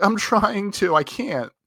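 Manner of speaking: whimpering, very high-pitched and very slow. Retelling how a dog owner answered: imitating a whimpering man. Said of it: "he was, like, whimpering".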